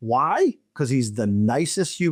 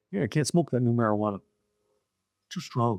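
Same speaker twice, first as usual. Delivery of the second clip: low, very relaxed, loose voice; 4 semitones lower, 5 dB quieter than usual. Retelling what the actor said at a party: Joel Murray impression like Yogi Bear. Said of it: "He kinda sounds like Yogi".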